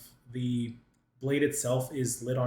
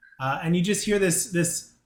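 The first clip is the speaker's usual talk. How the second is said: plain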